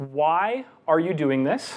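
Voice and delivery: ARE stressed, slow, with a rising tune.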